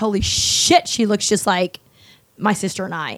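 ordinary talk, nothing marked

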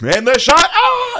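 put-on excited sports commentator, very loud, very high scream. Imitating a sports commentator calling a game: imitating Gus Johnson screaming. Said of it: "He freaking screams in the mic".

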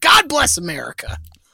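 put-on angry old-man voice. Showing a favorite old man cuss, something positive said: imitating an angry old man. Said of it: "but in an angry".

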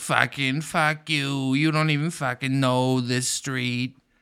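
laid-on-thick put-on Boston accent, drawn out. Talking about a documentary, mimicking people there in a thick Boston accent. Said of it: "people with thick Boston accents".

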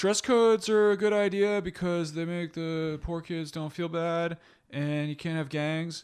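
high, slow, honking goose-like voice.

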